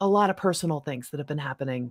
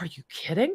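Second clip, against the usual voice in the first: unvoiced, shocked whisper.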